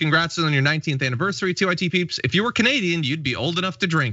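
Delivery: ordinary delivery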